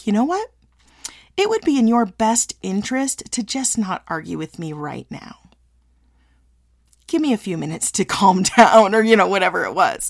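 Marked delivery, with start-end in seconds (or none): 0.1-8.4 controlled, measured, warning-like tone. Retelling how she warned arguing kids, imitating her own warning voice. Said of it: "I would talk in this kind of a voice".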